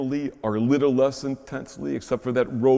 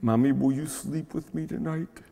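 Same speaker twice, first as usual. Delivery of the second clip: put-on small, shaky, trembling little child voice; 3 semitones higher, 3 dB quieter than usual. Telling of a little boy at bedtime during a storm, mimicking a child's trembling voice. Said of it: "he said with a tremble in his little voice".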